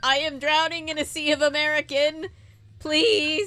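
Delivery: forlorn, lonely pleading tone. Imitating a British man who mistook the other speaker for British, acting out loneliness. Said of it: "that man was so lonely".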